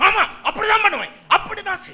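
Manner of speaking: high, fast, stubborn shouted delivery.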